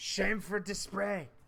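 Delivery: put-on high Japanese accent. Retelling what a guy says, in a japanese accent. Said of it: "a guy with a Japanese accent saying shameful display".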